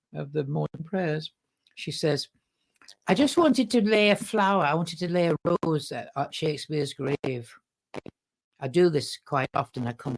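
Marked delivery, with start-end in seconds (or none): 3.1-10.1 put-on thick Manchester accent. Retelling what a woman said at the end of morning prayers, thick Manchester accent. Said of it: "thick Manchester accent".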